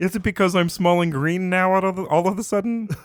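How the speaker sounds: puppet-like nasal voice. Imagining Kermit the Frog in Everybody Loves Raymond, talking to Deb: Kermit the Frog voice. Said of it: "Everybody Loves Raymond with Kermit the Frog".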